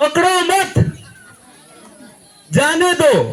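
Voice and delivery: short comma break after mat. Explaining where a comma falls in a Hindi line: short pause after mat. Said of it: "पकड़ो मत में coma थोड़ा सा रगत है ना ... ये कोमा है".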